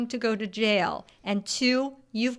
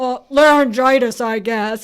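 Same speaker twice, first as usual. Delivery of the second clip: put-on raspy voice, louder; 2 semitones higher, 12 dB louder than usual. Recounting a favorite film scene, answering as Marilyn, deep raspy Marilyn voice. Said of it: "she gets this sort of deep, raspy voice".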